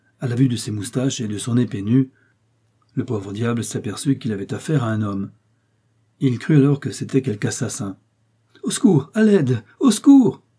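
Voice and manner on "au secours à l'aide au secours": very high, loud crying-out shout. Narrator reads Grimaud, who takes an armed man for an assassin, crying out for help. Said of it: "s'écria-t-il".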